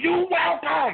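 very high-pitched call, yelled out. After holding a door for a woman on her phone, the speaker is retelling a yell. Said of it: "I yelled out".

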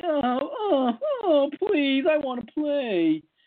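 small, high, little whimpering voice. The speaker mocks a player's weak complaint about not playing, with a little whimper. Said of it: "not just a little whimper like".

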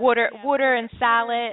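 put-on, thick, mock Philadelphia accent. Mimicking how the guest's Philly-born parents talk, in a thick Philadelphia accent. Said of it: "they have their little thick accents".

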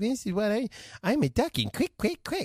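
put-on babyish caveman talk, high and sing-song. Imitating how a man suddenly started talking, doing his caveman talk. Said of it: "he does this caveman talk like".

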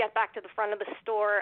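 usual speaking voice

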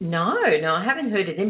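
ordinary talk

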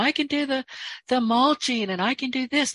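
high, insistent yelling. Retelling how a salesman yelled through the door: imitating someone yelling. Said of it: "He was yelling through the door".

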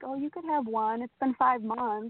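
coaxing, tempting little devil voice. Recalling a craving after months sober, voicing the devil on the shoulder: little devil voice. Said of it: "that little devil voice".

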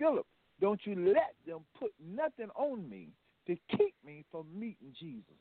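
play-acted, fervent, utterly certain conviction. Retelling a dying grandmother's last request: imitating someone speaking with deep conviction. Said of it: "It was past conviction".

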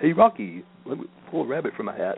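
goofy, high, swooping cartoon voice. Reading a poem the way Bullwinkle would, then quoting him: Bullwinkle voice. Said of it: "I always want to read this in a Bullwinkle voice".

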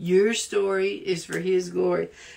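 the word your stressed.

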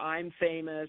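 ordinary talk, nothing marked

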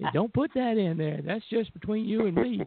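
put-on squeaky little voice. Retelling an interview in a hotel room: imitating Bill Malone's squeaky little voice. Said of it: "in his squeaky little voice".

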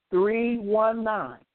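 at a slow pace. A host repeats the phone number for listeners, slowly. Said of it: "I'll say it again slow".

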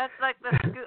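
speech mixed with laughter. Adding a remark about scuba material to another speaker, laughing while talking. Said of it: "sorry, I'm laughing".

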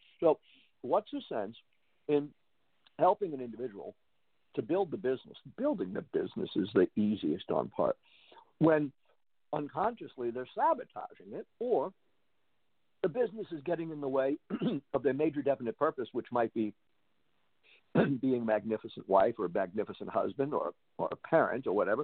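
chewing, talking with mouth full. Chewing a keto bar, the speaker explains a point, talking with mouth full. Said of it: "I'm chewing my keto bar here".

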